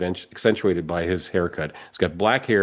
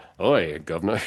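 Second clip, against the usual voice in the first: clumsy, poorly done put-on British accent. Describing a guy who seemed to wander into a movie, bad british accent. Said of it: "I can't do British accents very well".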